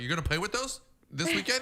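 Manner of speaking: mock incredulous dismay.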